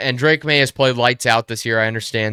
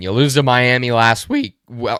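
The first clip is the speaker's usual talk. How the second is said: cracking voice. Speaker ranking football teams, voice cracking. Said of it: "voice crack".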